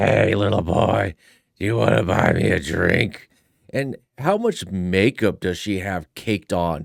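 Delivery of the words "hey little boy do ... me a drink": put-on raspy, rough, raised, old-barfly voice. Mocking a woman in a clip by imitating an old barfly voice. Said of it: "sounds like one of those old barflies".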